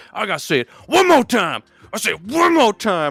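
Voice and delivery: mock furious coach rant, high and swooping. Retelling a coach in an Always Sunny episode breaking a clipboard: imitating angry coach. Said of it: "that coach is like".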